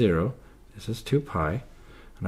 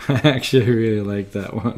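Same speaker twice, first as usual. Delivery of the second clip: loud speech through laughter; 3 semitones higher, 7 dB louder than usual. Speaker reacting to a pun they just explained, laughing while talking. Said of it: "I'm laughing like an idiot".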